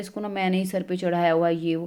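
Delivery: ordinary delivery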